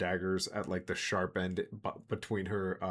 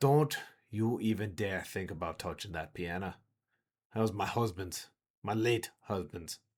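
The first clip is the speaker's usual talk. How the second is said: menacing, threatening tone. Voicing a tavern keeper warning a player off the piano: threatening in character. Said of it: "and she goes".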